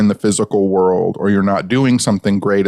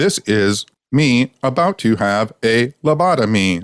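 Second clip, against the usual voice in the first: mechanical robot voice; 3 semitones higher than usual. Describing an imagined TikTok video of themselves, in the TikTok robot voice. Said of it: "That weird robot TikTok voice".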